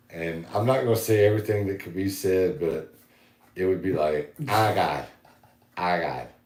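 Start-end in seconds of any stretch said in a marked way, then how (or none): 4.5-6.3 put-on very drawn-out, slow Boston accent, girl voice. Asked for a Bostonite, the speaker imitates a wild girl from Boston: Boston accent impression. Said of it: "Give us a Bostonite".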